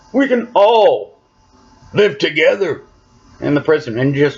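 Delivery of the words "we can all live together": high, whiny, halting voice that cracks. Recapping Hershel's death, the speaker mocks Rick pleading in a whiny, cracky voice. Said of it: "that whiny, cracky voice".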